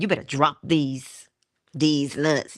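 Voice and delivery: ordinary talk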